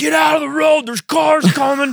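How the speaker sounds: very high, bossy, commanding shouted yell. Retelling how she yelled at the kids playing in the road: imitating someone yelling. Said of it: "she, like, yelled".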